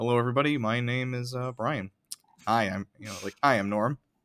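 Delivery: put-on dull, boring man voice. Retelling a show's home inspector introducing himself, imitating a boring man. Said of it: "the most boring man".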